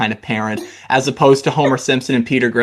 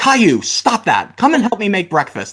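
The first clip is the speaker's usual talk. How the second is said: kinda mad, firm, pitched-up voice; 7 semitones higher than usual. Retelling a cartoon episode, the dad after Caillou throws a fit: imitating Caillou's dad being mad. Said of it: "all just kinda mad".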